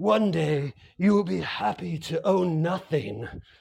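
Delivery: slow, deliberate, word-by-word delivery. Quoting a speaker on stage: Klaus Schwab impression. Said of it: "German guy".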